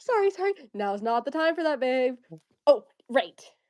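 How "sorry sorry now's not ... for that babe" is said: mock confident, self-assured tone. Retelling a character's line from a scene: imitating a confident apology. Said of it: "so confidently".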